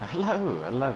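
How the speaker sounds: upbeat, happy, good-humoured, cheerful tone. A guest who just got disqualified greets the host: happy. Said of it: "you sound very happy".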